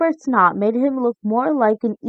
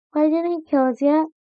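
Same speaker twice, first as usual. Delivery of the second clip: small, high little voice; 5 semitones higher than usual. On a seesawing boat, the narrator asks Sam something in a small voice. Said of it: "I said in a small voice".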